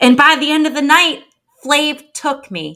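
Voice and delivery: put-on New York accent. Speaker quotes a woman's confessional from a show: best New York voice. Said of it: "I'm gonna try to do my best New York voice".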